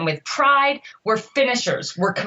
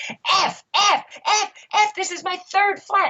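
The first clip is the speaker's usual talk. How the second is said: mock very high, level, shrill, drawn-out screaming rant; 10 semitones higher than usual. Retelling an athlete's reaction to a third flat tire: imitating someone screaming. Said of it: "he starts screaming".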